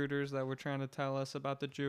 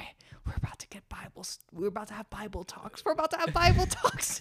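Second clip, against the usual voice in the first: confiding side remark, high and raised; 7 semitones higher, 6 dB louder than usual. Retelling whispering to a friend before a man came up: imitating own whisper. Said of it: "I was whispering to you".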